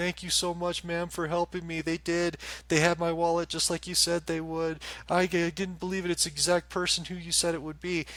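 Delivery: very high, weeping crying voice of a big man. Retelling what a tall guy said when he came back: imitating a crying man. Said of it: "and he's crying. He's like".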